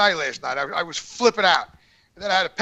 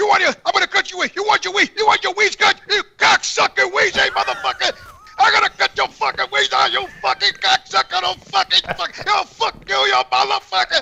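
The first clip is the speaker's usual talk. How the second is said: very high-pitched character voice; 11 semitones higher than usual. Doing an imitation of someone's impression of Jimmy the Bull, shouting threats. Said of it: "Do an imitation of the guy imitating you".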